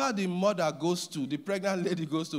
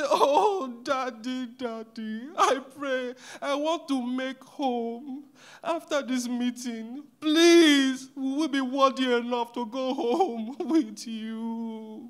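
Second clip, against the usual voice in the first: mock pleading, very slow, drawn-out, high; 6 semitones higher, 4 dB louder than usual. Describing his wife and daughter begging him to come home: imitating someone begging. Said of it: "my wife and daughter begging me".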